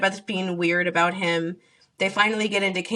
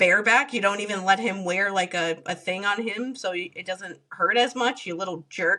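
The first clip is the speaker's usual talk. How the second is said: usual speaking voice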